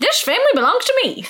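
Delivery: high, fast, creepy villainous voice. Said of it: "That was good".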